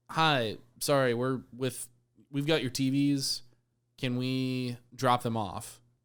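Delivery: ordinary delivery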